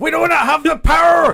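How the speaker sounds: put-on Irish accent. Recounting the first one and quoting Scotty: Scotty impression, Irish-sounding accent. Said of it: "Was that Scotty with an Irish accent?".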